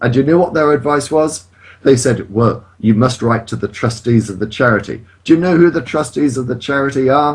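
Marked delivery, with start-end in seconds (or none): none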